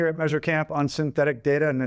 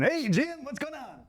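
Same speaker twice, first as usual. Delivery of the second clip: put-on high, soft New Zealand accent; 10 semitones higher, 6 dB quieter than usual. Imitating how the absent co-host greets him back, in Simon's Kiwi accent. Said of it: "his Kiwi tone".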